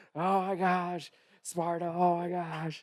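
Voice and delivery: very high, squealing, slowed-down, drawn-out acted freak-out. Retelling own reaction while watching a show: imitating own freaking out. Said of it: "I'm literally freaking out".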